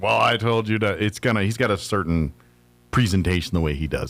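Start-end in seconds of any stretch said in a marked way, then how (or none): 0.0-1.0 mock, flat, monotone delivery. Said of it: "he always talks in this monotone".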